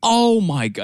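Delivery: mock yelling. Retelling watching a golf shot while boarding a flight: imitating own past yell. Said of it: "And I'm actually, like, yelling".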